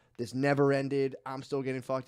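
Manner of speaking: ordinary delivery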